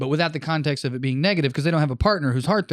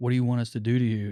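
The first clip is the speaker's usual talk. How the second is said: very sexy, sultry, seductive come-hither voice; 3 semitones lower, 4 dB quieter than usual. Retelling a couple's line to a third person, imitating a sexy voice. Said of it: "in a very sexy way".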